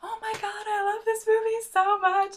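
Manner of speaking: shrill, very high, very loud half-yell. Retelling what a girl dancing nearby said: imitating someone half yelling. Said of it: "half yelling".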